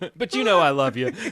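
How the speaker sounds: put-on tacky sarcastic tone. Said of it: "tacky and kind of sarcastic with Deb".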